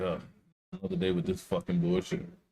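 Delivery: mock weary, beaten-down, defeated, very high voice. Imitating someone who sounds defeated: imitating a defeated tone.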